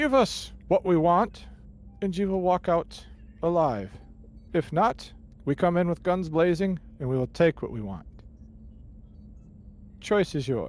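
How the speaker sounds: loud, high yelling.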